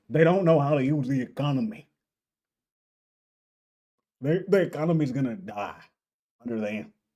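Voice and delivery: gruff, blunt, grumbling voice. Mocking a guy's response, imitating him in a gruff voice. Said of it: "he's saying it in a gruff voice".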